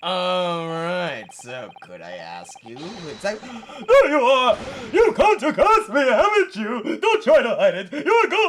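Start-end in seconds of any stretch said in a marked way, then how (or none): 3.4-8.5 put-on voice, much higher and louder. Performing a scene aloud, in a loud put-on voice. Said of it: "backing away from the microphone as much as I can so I can do that voice".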